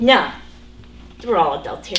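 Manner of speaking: usual speaking voice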